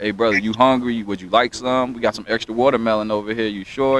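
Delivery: plain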